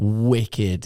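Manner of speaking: sincere, heartfelt emphasis on "wicked". Praising a new video to another speaker: sincere stress on wicked. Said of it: "I like the tone in your voice there when you said wicked".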